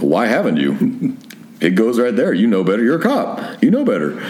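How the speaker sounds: normal talking voice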